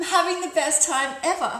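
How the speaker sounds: enthusiastic, excited delight. A speaker demonstrates tone of voice to an audience, genuinely enthusiastic. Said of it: "wildly different result".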